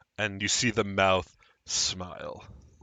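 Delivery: ordinary talk, nothing marked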